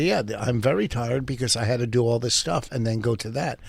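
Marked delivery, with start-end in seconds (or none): none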